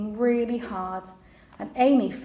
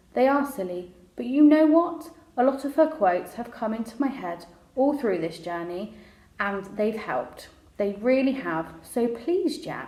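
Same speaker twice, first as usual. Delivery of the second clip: plain reading voice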